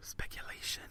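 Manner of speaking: soft, hushed whispered single word. Discussing unverified GameStop rumors, the word speculation whispered. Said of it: "It's so weird when I whispered it".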